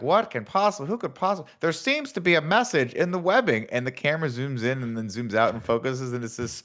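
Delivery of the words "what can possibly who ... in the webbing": put-on pitched-up British TV news reporter accent. Retelling a news report watched together, imitating a british news reporter. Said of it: "this British news reporter, is like".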